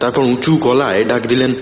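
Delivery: ordinary delivery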